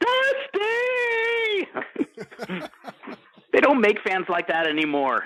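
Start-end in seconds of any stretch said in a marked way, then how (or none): 0.0-1.7 very high, top-of-lungs, crying bad-movie scream. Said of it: "he just screams to the top of his lungs, like in a really bad movie".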